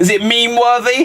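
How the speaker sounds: high, laughing, mock-eager tone. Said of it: "You're like".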